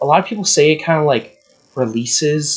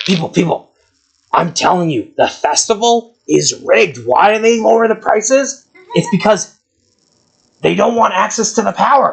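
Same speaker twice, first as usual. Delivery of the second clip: shouting rant, higher; 5 semitones higher, 3 dB louder than usual. Voicing the ridiculous bearded man in the hat, yelling to the crowd: NPC yelling to a crowd. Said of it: "he's yelling".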